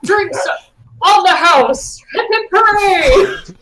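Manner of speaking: very high, loud disguised yell, muffled by covered mouth. Covering the mouth to pretend someone else in the bar is yelling: disguised yell, mouth covered. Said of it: "act like someone else is yelling".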